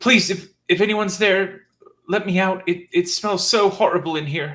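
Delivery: very high, loud woman's voice, calling out. Narrating a scene, voicing a woman the players hear, woman's voice calling out. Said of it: "a woman's voice calling out".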